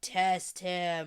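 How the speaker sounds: low, flat, emotionless deep voice. Explaining the voice to a listener, speaker repeats Rand's order in an emotionless Rand voice.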